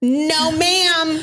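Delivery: high, sharp, put-on scolding voice.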